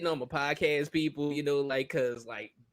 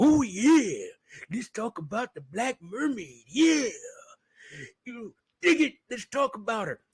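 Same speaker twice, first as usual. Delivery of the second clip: high, hyped, over-the-top pro wrestler promo voice; 6 semitones higher than usual. Noticing whom you suddenly sound like, play it up in a Macho Man Randy Savage voice. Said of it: "Why am I sounding like Macho Man Randy Savage".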